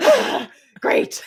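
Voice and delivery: high whispered satisfied sigh.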